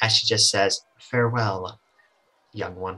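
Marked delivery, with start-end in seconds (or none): 1.0-3.0 elegant, graceful, soft, low motherly voice. Game master voicing the phoenix answering a farewell: elegant motherly voice. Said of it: "sort of an elegant, like, motherly voice".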